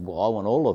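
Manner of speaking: strongly sarcastic tone. Retelling the director's reply about wanting sheep: imitating a sarcastic reply. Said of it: "he sarcastically goes".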